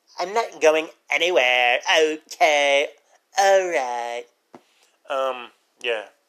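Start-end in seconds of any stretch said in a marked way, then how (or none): 0.2-4.3 put-on teenage girl voice. Imagining a horror movie called The Orange Man: Donald sounding like a teenage girl. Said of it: "I just made Donald sound like a teenage girl".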